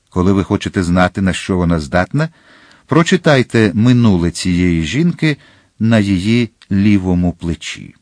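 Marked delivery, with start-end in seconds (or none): none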